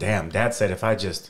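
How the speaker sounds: ordinary talk, nothing marked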